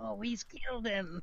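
put-on fantasy creature voice. Imitating Gollum when no one is watching: Gollum voice. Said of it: "You did that pretty good, [name]".

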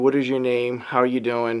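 ordinary delivery

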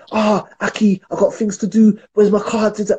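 mock hassled, demanding outburst, high and impatient. Retelling how a man phoned in the morning demanding his memory card, retelling a shout. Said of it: "he starts shouting".

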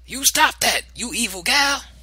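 booming, shrill, very loud, very high shouting. Granny steps onto the porch and interrupts the girl, shouting. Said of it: "she shouted".

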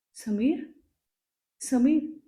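wavering, trembling, quavering voice calling out. Savita, sitting up in the dark, calls for Sameer in a trembling voice. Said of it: "तिनं थरथरत्या आवाजात हाक मारली".

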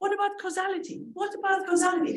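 play-acted shrill screaming. Retelling screaming at the radio during a policy debate: imitating own past screaming. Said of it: "I was screaming at the radio".

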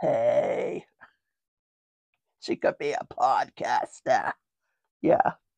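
very low, slow, nonchalant smoker's drawl. Speaker shows how Rebecca talked, imitating Rebecca's smoker voice. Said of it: "That's how she talked".

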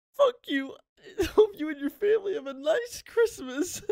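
put-on very high-pitched gamer rage outburst. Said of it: "pounds his desk".

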